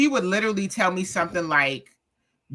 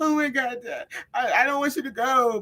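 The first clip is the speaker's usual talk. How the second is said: put-on, high, tearful words pushed out through sobs; 5 semitones higher than usual. Recalling sitting beside her dying dad in hospice: imitating her own crying. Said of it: "And I'm sitting beside him crying".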